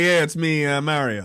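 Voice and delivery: plain New York guy voice. Explaining why Mario's voice must be the stereotype, doing Mario as a plain New Yorker. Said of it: "Mario from New York or whatever".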